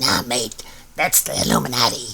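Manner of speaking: soft, put-on gremlin-like creature voice. Describing a zombified teddy bear who talks through a ring modulator, in a gremlin voice. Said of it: "gremlin voice".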